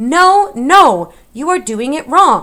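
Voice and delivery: very loud, full-volume, high, slow, drawn-out shout. Roscoro calls out from Mig's pocket; shouted. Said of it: "shouted Roscoro from Mig's pocket".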